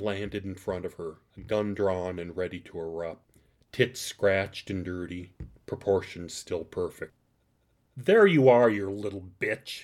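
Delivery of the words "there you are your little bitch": booming, loud, feral, venomous snarl. Narrator reads a woman with a drawn gun crouching over another woman; snarled. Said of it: "the woman snarled".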